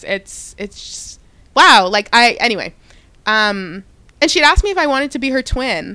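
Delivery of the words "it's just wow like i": overcome voice, slow, raised, words breaking off. Recalling being asked to be someone's twin, getting emotional. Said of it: "not me getting emotional".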